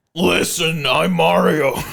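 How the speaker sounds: put-on gruff character voice. Mocking how someone would play the role, in a gruff Mario voice. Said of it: "he's just gonna put like a big gruff accent on?".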